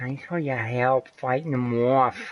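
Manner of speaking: over-the-top, exaggerated Boston accent. Repeating a video game character's line while playing, exaggerated boston accent. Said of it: "Got the most exaggerated Boston accent you could ever hear".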